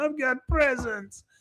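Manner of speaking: play-acted, very high blubbering through tears. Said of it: "just crying and crying and crying".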